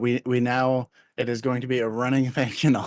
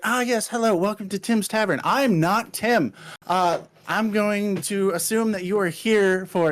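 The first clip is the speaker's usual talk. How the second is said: in-your-face, hyper, eager, pitched-up enthusiastic voice; 8 semitones higher than usual. Voicing an eagerly approaching tavern greeter: hyper, in-your-face enthusiastic character. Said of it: "hyper, very in your face enthusiastic".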